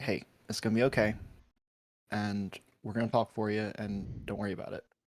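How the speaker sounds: very quiet, hushed mutter under the breath. Birthright walks over to Lilith and speaks: under his breath. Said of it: "under his breath is like".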